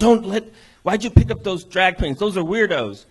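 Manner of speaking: loud, high yelling. Retelling how an older brother yelled about picking up drag queens: imitating brother yelling. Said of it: "my brother starts, um, yelling at them".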